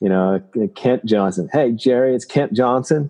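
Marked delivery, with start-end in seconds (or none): 1.5-3.1 put-on Texas drawl, pitched higher. Retelling a phone call from the Seahawks strength coach, Kent Johnson's Texas drawl. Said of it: "he's got this Texas drawl".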